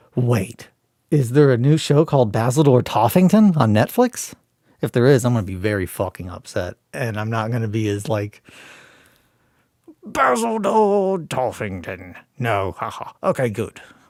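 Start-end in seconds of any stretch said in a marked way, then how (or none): 10.0-12.2 high-pitched character voice with swooping pitch. Showing how a planned game character talks: Basil Toffington character voice. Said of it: "That's how he talks".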